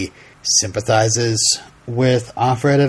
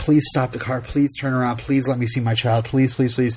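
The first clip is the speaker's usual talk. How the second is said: mock desperate pleading tone, repeated over and over; 2 semitones higher than usual. Recounting how someone begged to have the car turned around, retelling desperate begging. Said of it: "goes from like begging and pleading".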